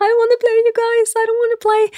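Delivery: mock, very high, tearful crying voice. Recalling playing a horror game on stream, retelling own crying on stream. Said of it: "jeg begynte å gråte på stream".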